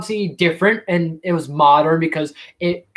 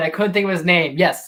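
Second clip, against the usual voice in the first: usual speaking voice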